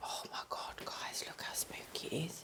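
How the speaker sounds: breathy, barely voiced, very soft whisper. Exploring a spooky spot with others, addressing the guys, whispering. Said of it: "Don't know why I'm whispering".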